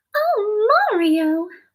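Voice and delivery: very high, sweet voice. Showing off voices, the speaker tries out a Princess Peach voice. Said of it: "My Princess Peach voice".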